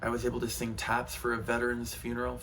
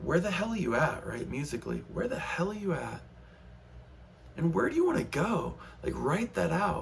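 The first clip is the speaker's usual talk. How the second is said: upset-sounding voice. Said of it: "I know I sound like I'm upset".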